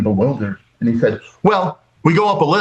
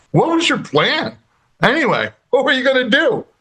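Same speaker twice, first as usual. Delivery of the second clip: very high voice, words shaken by laughter; 12 semitones higher than usual. Retelling what the other man asked him after turning his chair, imitating laughing speech. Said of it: "he was like laughing".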